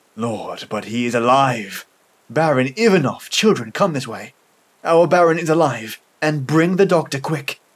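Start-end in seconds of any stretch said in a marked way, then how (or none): none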